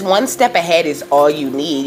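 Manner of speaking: ordinary talk, nothing marked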